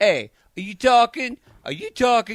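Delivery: loud, high-pitched New York Brooklyn accent. Podcast host riffing on a listener from Brooklyn, in a Brooklyn accent. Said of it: "it's just like a Brooklyn accent".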